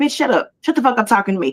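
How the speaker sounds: mock irritated snapping. Describing how men talk to women these days, imitating an irritated man snapping. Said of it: "fed up with us and disgusted by us and irritated".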